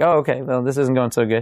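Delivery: ordinary delivery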